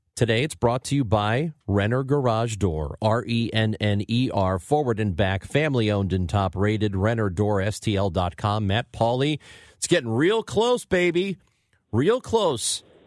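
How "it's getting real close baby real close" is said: teasing, taunting, very high-pitched ribbing voice. Greeting the show's guest host: mocking imitation of Matt Pauley's voice. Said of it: "your mocking, like, tone of my voice".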